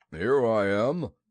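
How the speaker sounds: loud, growly bear voice. Reading a story aloud, voicing Pooh answering Christopher Robin: growly Pooh voice. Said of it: "said a growly voice behind him".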